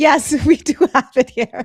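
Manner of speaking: talking through laughter. Answering whether the store exists in canada, laughing while talking. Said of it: "Why are you laughing?".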